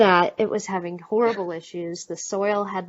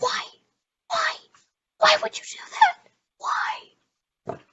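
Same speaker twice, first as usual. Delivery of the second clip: slow, loud, forceful, half-shouted whisper yell. Asked for an example, showing a past outburst: whisper yelling. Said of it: "give us an example of your whisper yell".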